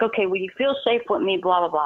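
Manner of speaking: ordinary talk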